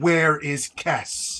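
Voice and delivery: put-on aged-sounding older woman's voice. Game master voicing a hooded figure pointing a hook shot at Adesh, older woman's voice. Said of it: "you hear a kind of older of a voice goes".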